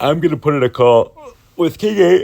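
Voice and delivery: talking through a yawn. Poker player explaining a call to viewers, speaking through a yawn. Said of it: "Sorry, I'm yawning".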